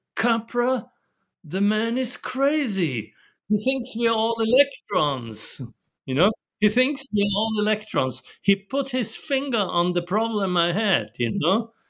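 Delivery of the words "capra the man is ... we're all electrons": put-on British accent, "crazy" drawn out and stressed. Retelling what Gregory Bateson said of the speaker at a seminar: Gregory Bateson's British accent. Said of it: "Bateson said with his British ap-, accent".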